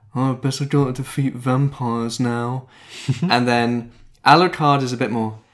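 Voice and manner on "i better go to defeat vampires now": flat, mildly bored, uninterested delivery. Describing the show's vocal performances, doing Trevor Belmont, mock-bored. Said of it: "he's kind of slightly bored".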